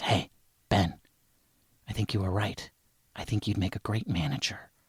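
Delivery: low, very quiet, hushed half-whisper under the breath. Acting out a man in Groucho glasses speaking to you by the melons, half-whispering. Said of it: "he whispers to me and he says".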